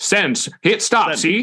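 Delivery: put-on vintage old-timey mid-Atlantic movie accent. Joking about how people sent wires back in the day, mid-atlantic old-timey movie voice. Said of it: "talking in a mid-Atlantic old-timey movie voice".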